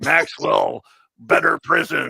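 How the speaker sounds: put-on movie-monster voice. Mocking a man's emotional capabilities to a co-speaker, with a Frankenstein impression. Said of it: "you do look like Peter Boyle when you did the impression".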